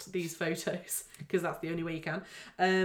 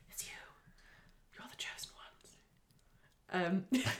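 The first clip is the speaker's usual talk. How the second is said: creepy whisper, much quieter; 7 dB quieter than usual. Host tells listeners they will do the public voting: creepy whisper. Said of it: "how much longer are you going to creepily whisper?".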